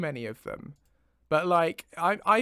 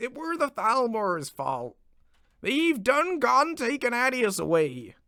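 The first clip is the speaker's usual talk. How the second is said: put-on higher-pitched Somerset accent; 6 semitones higher than usual. Trying out different accents, the speaker delivers a line in a Somerset farmer accent. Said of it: "Sort of farmer voice".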